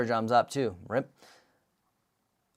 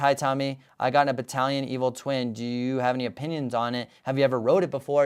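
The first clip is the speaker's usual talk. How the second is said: ordinary talk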